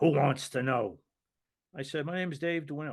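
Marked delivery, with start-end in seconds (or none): 0.0-1.0 put-on tough mobster-like mob-boss voice. Retelling a phone call where a man answers him, in a mobster-like voice. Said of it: "sounded like he would make Marlon Brando and The Godfather sound like a".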